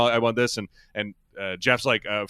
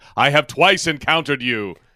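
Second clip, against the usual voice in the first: put-on grandiose hero voice; 2 semitones higher than usual. Mocking awkward wording by imagining it spoken: mighty Thor voice. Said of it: "who are you, the mighty Thor?".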